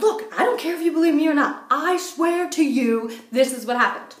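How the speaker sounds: put-on angry insistence. Retelling a moment with a giggling woman, imitating getting mad. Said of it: "I start really getting mad".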